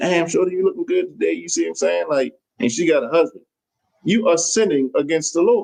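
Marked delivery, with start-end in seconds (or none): 0.0-1.3 play-acted, flirty and flattering tone. Acting out a work husband gassing up a married woman, as a mock flirty come-on. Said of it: "talking to that woman and gassing her up".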